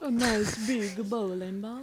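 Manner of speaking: slow, teasing, put-on Finnish accent. Reacting to a hydraulic press video intro: put-on Finnish accent. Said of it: "making fun of the Finnish accent".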